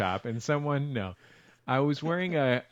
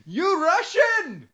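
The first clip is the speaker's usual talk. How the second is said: mock very high-pitched, loud yelling; 6 dB louder than usual. Retelling what a stranger on the street said: imitating a man yelling. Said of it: "why someone would yell that at me".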